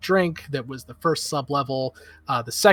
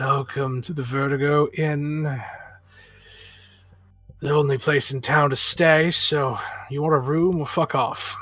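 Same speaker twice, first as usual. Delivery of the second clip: put-on elderly innkeeper character voice. Voicing an innkeeper in his seventies greeting travellers: elderly innkeeper voice. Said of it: "he looks at you and says".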